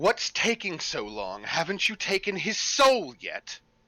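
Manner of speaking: animated woman's voice with swooping pitch. Narrating a temple scene, a woman's voice calls down from a balcony: woman's voice. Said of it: "it's a woman's voice that comes from above and says".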